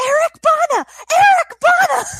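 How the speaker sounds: shrill, very high-pitched, loud screaming. Retelling Darren yelling from the living room, imitating Darren screaming. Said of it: "I just hear Darren screaming".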